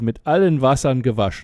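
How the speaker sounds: ordinary delivery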